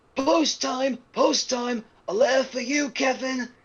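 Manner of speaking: very high-pitched, husky cartoon voice. Describing how a cartoon character sounds in one version, doing a husky Bing Bong voice. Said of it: "he sounds just like this with a husk".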